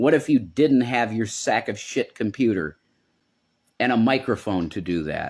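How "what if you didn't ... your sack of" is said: plain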